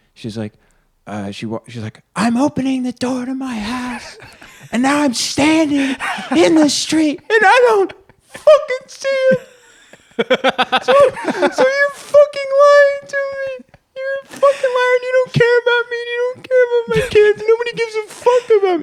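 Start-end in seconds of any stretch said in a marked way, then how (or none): 2.2-18.9 put-on screamed complaint, higher and louder. Retelling a customer's phone call: imitating a woman screaming. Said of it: "screaming at me on the phone".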